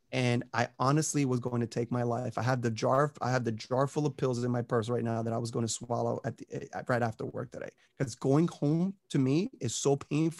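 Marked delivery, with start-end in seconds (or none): none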